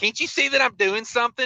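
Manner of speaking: put-on snippy, snarky tone. Retelling a cashier answering the next customer: imitating a snarky cashier. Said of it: "she was just so snarky".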